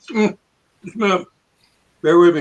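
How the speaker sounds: talking through a mouthful while chewing. A participant asked to introduce himself while eating potato chips, talking with mouth full. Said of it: "got my mouth full now".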